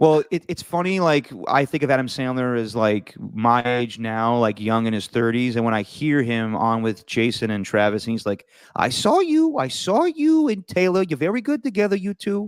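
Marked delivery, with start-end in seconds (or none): 8.7-12.5 put-on high old man voice. Retelling a podcast interview, imitating Adam Sandler. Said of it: "he just sounds like an old man now".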